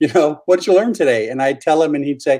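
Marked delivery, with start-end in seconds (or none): 0.5-1.3 put-on Irish brogue, easy and light. Retelling what the father would ask after church, imitating his brogue. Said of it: "in his beautiful brogue".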